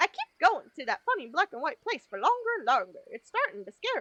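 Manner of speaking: failed, off-target attempt at cartoon mouse voice. Voicing Mickey's reply to the speaker, in a failed Mickey Mouse voice. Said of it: "That definitely was not the right voice".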